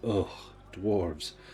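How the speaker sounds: utterly disgusted groan, full of revulsion. Voicing a character handed a ring by a dwarf: disgusted. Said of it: "a look of just utter disgust".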